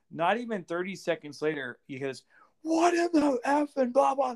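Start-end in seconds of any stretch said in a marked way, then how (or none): 2.6-3.7 screaming, higher and louder. Retelling how a man lost his mind on set: imitating someone screaming.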